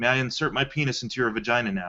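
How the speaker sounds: acted flat, dry delivery. Retelling a line from a film dinner scene: imitating a deadpan delivery. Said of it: "he just says it so, like, deadpan".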